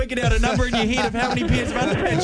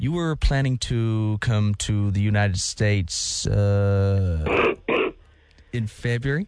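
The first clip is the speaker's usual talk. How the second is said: fake American official's accent with a drawn-out uh; 14 semitones lower than usual. Prank calling someone, posing as a US official: put-on American accent. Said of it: "you gotta do it in an American accent".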